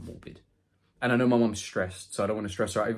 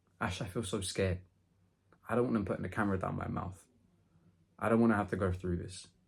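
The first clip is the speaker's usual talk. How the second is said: mock-tearful, scared crying; 4 dB quieter than usual. Retelling her mother breaking down before a camera exam: imitating mom crying. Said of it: "she finally breaks and she starts crying".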